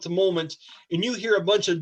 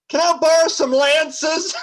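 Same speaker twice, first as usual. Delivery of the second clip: loud, booming, echoing voice, pitched high; 9 semitones higher, 6 dB louder than usual. The game master voices her calling from the distance: loud echoing voice. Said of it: "her loud voice echoing through the chambers".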